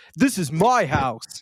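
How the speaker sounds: slow retro sixteen-bit game character voice. Describing a football video game player standing up, in a sixteen-bit game voice. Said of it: "in the sixteen-bit voice and goes".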